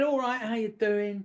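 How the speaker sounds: put-on South London accent. Retelling a man's greeting on first meeting him, south east london accent. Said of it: "delightful South London, South East London accent".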